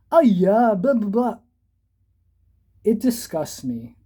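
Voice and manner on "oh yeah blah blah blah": mocking put-on Malaysian accent, pitched high. Mocking a comedian for putting on a whole accent: mocking Uncle Roger's put-on accent. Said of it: "putting on a whole accent like".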